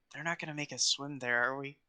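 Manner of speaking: hushed whisper. On the ship's deck, quietly asking Proud a question, whispering. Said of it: "I just kind of whispered to Proud".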